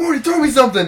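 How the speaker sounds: shrill, very loud, high, belted-out voice. Retelling a cartoon scene, imitating Rick shouting for something: Rick voice. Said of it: "Rick's like".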